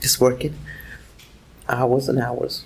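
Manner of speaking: very quiet, hushed, barely audible half-whisper. Answering a question about their life, half-whispering. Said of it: "You're whispering".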